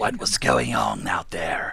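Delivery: very low, raspy woman's voice, heavy smoker rasp. Voicing the commander's question: raspy five-pack-a-day voice. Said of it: "The five pack a day voice".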